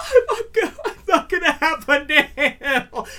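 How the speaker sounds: put-on sobbing, very slow, high and drawn-out. Retelling crying over a nail in front of their grandmother: retelling own crying. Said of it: "and I'm crying".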